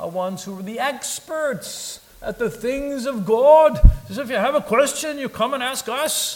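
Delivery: put-on British-Irish accent, pitched very high. Talking about the Pharisees, the speaker voices their attitude: British-Irish accent. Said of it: "That's sort of a British-Irish accent I'm working on".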